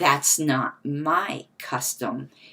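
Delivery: acted slow, imperious, haughty, lordly, superior tone. Quoting what another person said, in a mock-imperious voice. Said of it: "that very imperious".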